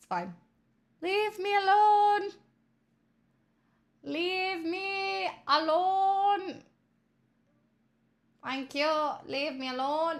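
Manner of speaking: put-on Irish accent. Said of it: "stop the Irish accent again".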